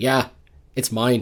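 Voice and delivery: put-on Irish accent. Retelling what the Irish guy from Braveheart said, in an Irish accent. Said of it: "great accent. Wow, well done".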